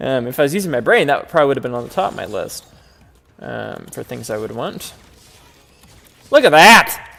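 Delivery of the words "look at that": thrilled, excited yell, high-pitched and very loud. Seeing all the damage splots appear, yelling excitedly. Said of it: "Sorry for yelling".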